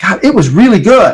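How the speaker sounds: high, genuinely delighted, fully convinced, enthusiastic tone. Showing how an interviewee sounds when they imply it's great: enthusiastic, convinced. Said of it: "where they imply it's great".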